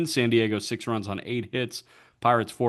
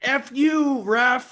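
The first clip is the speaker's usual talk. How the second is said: mock shrill, very high, heated holler; 14 semitones higher, 4 dB louder than usual. Replicating a moment from a funny GIF, retelling a yell at the ref. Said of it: "yelling "F you" at Edwin Jimenez".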